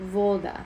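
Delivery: voda stressed on first syllable vo. Explaining second-to-last syllable stress: voda stressed on first syllable. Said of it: "you're putting the emphasis on the second to last syllable, which happens to be the first one in this case".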